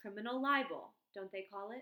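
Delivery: plain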